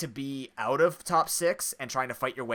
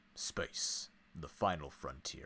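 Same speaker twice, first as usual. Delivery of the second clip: hushed, breathy, grand narrator-style whisper; 11 semitones lower, 14 dB quieter than usual. Showing another speaker a budget Morgan Freeman voice. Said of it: "I'm budget Morgan Freeman".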